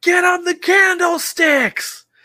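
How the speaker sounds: shrill, booming, very loud, high-pitched yell. Telling a story about a ballgame, quoting Mel's shout: retelling Mel's yell. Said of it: "Mel just yells".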